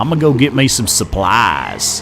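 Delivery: slow, exaggerated, over-the-top Texas drawl. Asked to say supplies again, answering in an exaggerated Texas accent. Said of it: "are you mocking my Texas accent, ma'am? ... was that over the top?".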